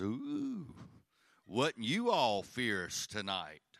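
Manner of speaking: put-on sarcastic smart-aleck tone with swooping pitch. Retelling what his wife says in the car: imitating wife being sarcastic. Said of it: "She's being very sarcastic and smart alecky".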